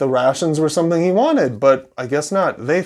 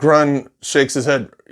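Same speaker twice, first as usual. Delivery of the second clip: ordinary talk, nothing marked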